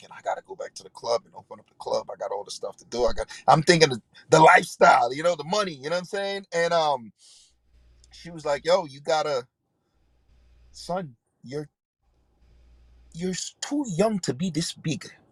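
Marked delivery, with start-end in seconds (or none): 8.7-15.1 put-on strong Latin accent, slow. Retelling what a woman told him when he was young, in a strong Latin accent. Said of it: "she had a strong Latin accent".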